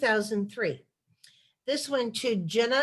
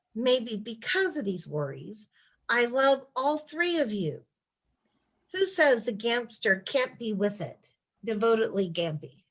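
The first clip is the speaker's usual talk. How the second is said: plain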